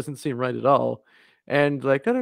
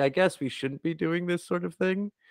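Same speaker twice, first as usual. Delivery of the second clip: soft, nonchalant, slightly pitched-up offhand tone; 5 semitones higher, 5 dB quieter than usual. Describing how a character reacts to danger, imitating a very nonchalant tone. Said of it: "It's just like very nonchalant".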